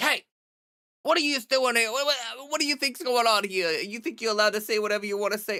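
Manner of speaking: sudden put-on Brooklyn accent. Comparing critics to a barking dog, speaker acts out scolding it in a Brooklyn accent. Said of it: "I don't know why I just got like a Brooklyn accent".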